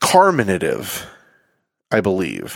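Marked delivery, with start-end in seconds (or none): 0.0-1.0 carminative with first syllable car stressed. Recalling how the word was heard pronounced, stress on first syllable car. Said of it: "The enunciation was on car from when I heard it".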